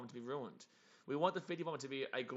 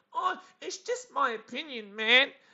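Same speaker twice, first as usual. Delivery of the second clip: mock very high, very loud, drawn-out blubbering wail; 11 semitones higher, 12 dB louder than usual. Retelling a guy's reply after being called an idiot: imitating someone crying. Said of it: "he started crying like a little bitch".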